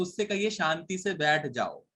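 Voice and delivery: plain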